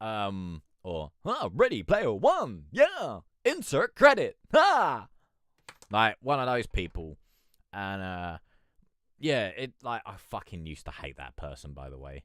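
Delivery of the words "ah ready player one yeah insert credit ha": very high, very loud, swooping, sarcastic arcade announcer. Imitating an arcade fighting game announcer: upbeat sarcastic announcer voice. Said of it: "really sort of upbeat, but almost sarcastic, uh, voice".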